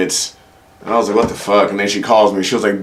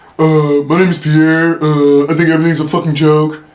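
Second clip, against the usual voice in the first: high, teasing, mocking parody voice; 6 semitones higher, 3 dB louder than usual. Retelling how his girlfriend imitates his voice: imitating her impression of him. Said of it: "whenever she imitates my voice".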